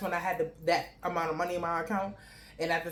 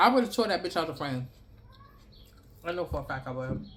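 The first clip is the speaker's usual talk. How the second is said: mouth full, chewing and smacking. Speaker talks while eating a snack, chewing while talking. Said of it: "I'm sorry when I'm chewing and smacking".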